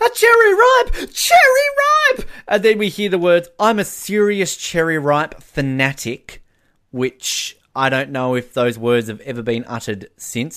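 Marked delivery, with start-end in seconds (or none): 0.0-2.3 very high, stretched-out, drawn-out shrill fanatic's voice. Showing the other speaker what good old Shona is basically like, imitating Shona. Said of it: "good old Shona here basically like".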